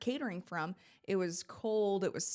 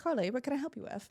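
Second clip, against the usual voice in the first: put-on high-pitched voice with Australian accent; 5 semitones higher than usual. Retelling asking the producer for a word, [name]'s Australian accent. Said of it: "That's a great accent".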